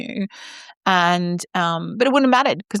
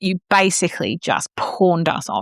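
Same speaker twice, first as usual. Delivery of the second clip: plain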